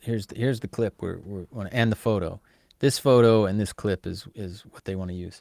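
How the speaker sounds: usual speaking voice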